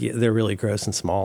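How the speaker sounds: normal talking voice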